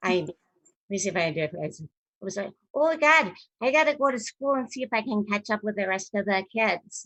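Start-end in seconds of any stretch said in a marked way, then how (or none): 2.7-7.1 bad put-on Minnesota accent, pitched up. Speaker imitates their younger self before conservatory school: horrible Minnesota accent. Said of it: "I had this horrible Minnesota accent".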